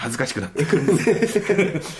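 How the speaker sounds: high, loud embarrassed laugh.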